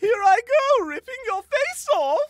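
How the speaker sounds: very high, very loud cartoon voice. Asked for an example, doing the Newt character voice: Pops from Regular Show voice. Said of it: "the Newt voice was so good".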